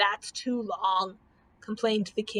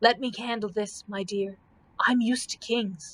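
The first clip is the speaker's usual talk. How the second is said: whispered voice. Reading a story aloud, a knight speaks to Dorothy: whispering. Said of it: "whispered Sir Hokus".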